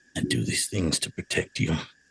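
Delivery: muttered under breath. As she walks away, he speaks after her, muttered under his breath. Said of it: "he just mutters under his breath that".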